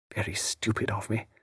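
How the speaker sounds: whispered, hushed sotto voce undertone under the breath. Narrator reading a lady's line in a novel, said sotto voce. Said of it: "sotto voce".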